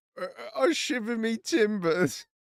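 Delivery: put-on British accent, high, slow, drawn out. Imitating a character who is british, in a put-on british accent. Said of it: "since he's British, he goes".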